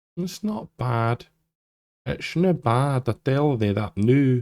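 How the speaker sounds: slipped-in Scottish accent. Commenting on an in-game trailer's price, slipping into a scottish accent. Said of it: "I don't know why I went into a Scottish accent then".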